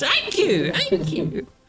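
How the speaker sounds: put-on echoing voice. Retelling a thank-you at a wedding as it echoed: imitating an echo. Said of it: "And it echoes".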